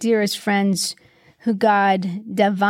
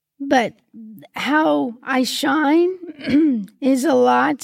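voice cracking, choked up, very drawn out; 4 semitones higher than usual. Speaking on a podcast, getting all choked up. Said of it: "I'm getting all choked up".

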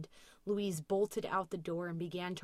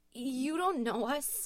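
frightened, nervous high shout, voice starting to shake; 7 semitones higher, 3 dB louder than usual. A woman calls out to a voice she cannot place, nervous shout, voice shaking. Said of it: "Louise shouted nervously, her voice beginning to shake".

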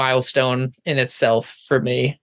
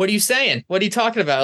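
high, firm, assertive, acted challenging tone; 7 semitones higher than usual. Retelling questioning a whispering audience member: imitating an assertive challenge. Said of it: "trying to be super, like, assertive".

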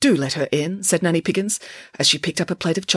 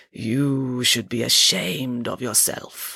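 grand, rich, resonant, reproachful fortune-teller voice; 6 semitones lower than usual. Madame Zandra addresses Sarah Piggins, booming in a resonant voice. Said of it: "boomed Madame Zandra in her beautiful, resonant voice".

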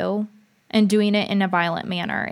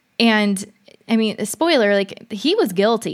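ordinary delivery

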